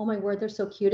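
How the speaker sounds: ordinary talk, nothing marked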